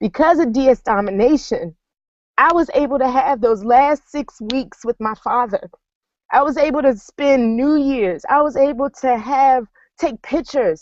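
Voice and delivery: choked up, voice catching.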